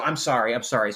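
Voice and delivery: mock remorseful tone, laughing, breaking up with giggles. Retelling breaking up on set while a prank keeps going: imitating laughing while apologizing. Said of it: "I lose it".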